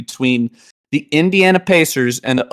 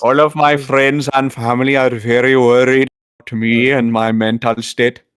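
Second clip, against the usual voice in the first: mournful, melancholy, sorrowful put-on Indian accent. After insisting he is completely serious, mock-melancholy Indian accent impression. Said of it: "doing a melancholy Indian impression".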